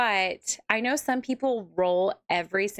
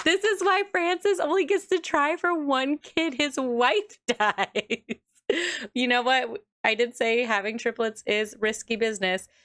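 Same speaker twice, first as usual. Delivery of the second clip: talking through laughter, higher; 5 semitones higher than usual. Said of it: "I'm sorry I'm laughing".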